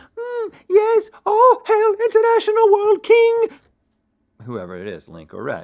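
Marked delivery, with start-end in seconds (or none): 0.2-3.5 snivelling, sniffling squire voice, very high, drawn out. Showing how the loser must proclaim the winner's title: sniffling squire voice. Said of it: "That was a squire voice".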